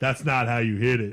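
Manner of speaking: deep, loud, resonant voice. Retelling a scene: a voice from the dark entrance speaks, deep booming voice. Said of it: "a deep booming voice from the dark entrance".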